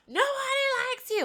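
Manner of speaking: put-on high-pitched drunk yelling. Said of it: "she starts yelling at Carl".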